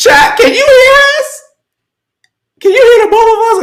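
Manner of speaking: very high, head-voice falsetto. Asking chat whether they can hear both of us, in a falsetto voice. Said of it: "me and my falsetto voice right now".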